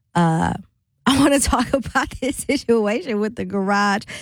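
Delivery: laughing through the words. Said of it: "And I'm laughing".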